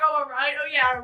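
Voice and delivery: ordinary talk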